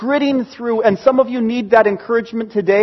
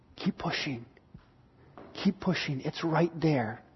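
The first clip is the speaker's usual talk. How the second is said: very soft, hushed, urging tone. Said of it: "The Holy Spirit within you is going".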